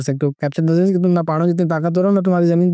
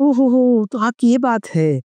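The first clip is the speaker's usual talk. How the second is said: slow, high-pitched, condescending, belittling mocking tone; 6 semitones higher than usual. Showing a way of humiliating someone through tone: mocking, humiliating tone. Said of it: "लहज़ा ऐसा बना लेना".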